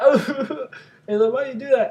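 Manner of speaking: put-on crying. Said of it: "he starts crying a little bit".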